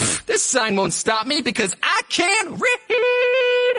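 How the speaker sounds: cocky dog voice, high, slow and shouted.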